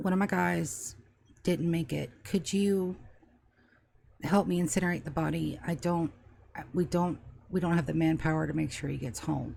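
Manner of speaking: very low, dropped-down, hushed murmur. Voicing Barrett, who taps Namriel on the shoulder, in a very low voice. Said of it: "he says in a very low voice".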